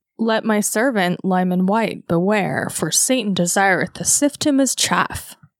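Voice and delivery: put-on voice of God making a pronouncement. Quoting a revelation that warns a servant, in a God voice like Elizabeth Holmes. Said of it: "I gotta try my God voice again".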